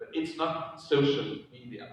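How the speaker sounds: strong stress on "social", "media" kept plain.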